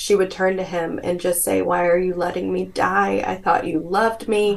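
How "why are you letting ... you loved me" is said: put-on, desperate, pleading tone. Retelling mom's words to dad in the ER waiting room: imitating a desperate plea. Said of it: "begged my dad".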